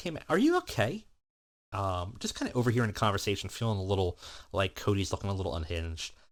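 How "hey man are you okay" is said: concerned, caring tone. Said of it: "he's got some concern".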